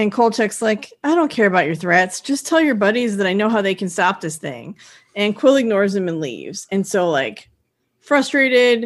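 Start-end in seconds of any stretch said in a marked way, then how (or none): none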